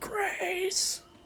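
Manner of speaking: very high, mild mock scream.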